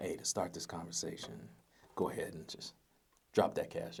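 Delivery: seductive, breathy near-whisper, very quiet. Recording a voice memo, the speaker turns on a sexy voice. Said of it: "I can turn on my sexy voice".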